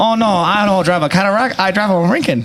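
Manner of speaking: high-pitched voice with a Chinese accent.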